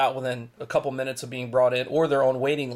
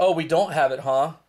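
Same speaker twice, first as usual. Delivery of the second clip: mock sarcastic delivery; 3 semitones higher than usual. Retelling a store clerk's reply to a watch request, imitating a sarcastic clerk. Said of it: "made like this real sarcastic smiley face".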